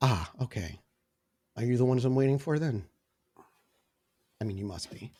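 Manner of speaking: submissive, yielding, meek, soft, deferential voice. A character looks up at the group from a paper, submissive. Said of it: "He becomes less standoffish and almost immediately more submissive".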